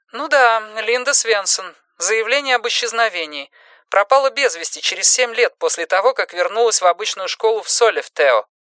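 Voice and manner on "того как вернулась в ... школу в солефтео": plain reading voice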